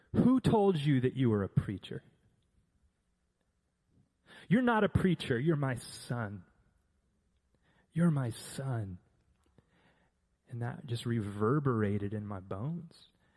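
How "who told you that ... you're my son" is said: thundering, booming, swooping divine voice. A speaker retelling words they heard God say to them, in God's booming voice. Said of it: "the booming voice of the Father".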